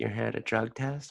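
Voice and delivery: put-on southern accent. Retelling a chat with a woman at a drug test, doing her southern drawl. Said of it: "she has a southern drawl".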